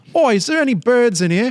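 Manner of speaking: put-on British accent, pitched very high. Imitating how the British ask about women: put-on British accent. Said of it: "As the British call them, birds".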